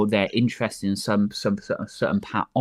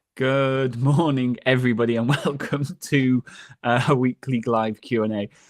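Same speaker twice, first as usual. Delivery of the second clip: slow words broken by laughter; 3 semitones higher than usual. Opening a weekly live Q and A, laughing while talking. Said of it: "Sorry for laughing".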